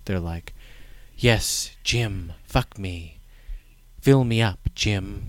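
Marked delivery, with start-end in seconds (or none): 1.2-5.3 slow, neutral, level, flat monotone. Describing background comments in a scene, imitating Linda and Tracy's monotone delivery. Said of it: "neutral and monotone in their delivery".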